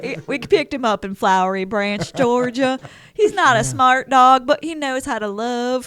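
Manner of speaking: loud put-on Southern accent. Describing their dog, who talks like this: Southern accent. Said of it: "'cause he talks like this".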